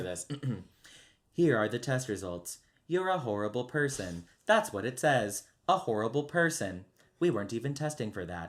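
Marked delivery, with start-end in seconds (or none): 1.3-8.5 completely flat, cutting delivery. Sharing favorite lines from the game with a co-host, doing a GLaDOS voice. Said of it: "I'll try to do my best Gladys voice".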